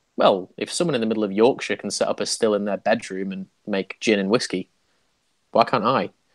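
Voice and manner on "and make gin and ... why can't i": ordinary talk, nothing marked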